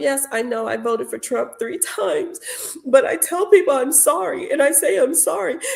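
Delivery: sobbing, boohoo, tearful crying. Retelling what an upset woman said, imitating a woman crying. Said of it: "she was just boohoo crying and she was so upset".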